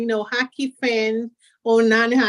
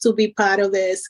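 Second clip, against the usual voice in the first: ordinary delivery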